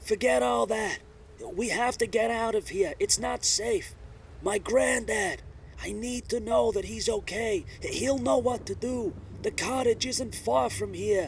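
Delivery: put-on loud shouting Boston accent. Amelia stands up as wind and rain pour into the cafe, shouting over the wind. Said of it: "she is clearly in some state of amnesia. / it is clear that [name] is an educated woman with a cosmopolitan middle-class background and a predominantly Bostonian accent. / it is clear that [name] is a".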